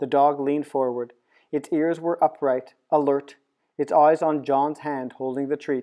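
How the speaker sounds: plain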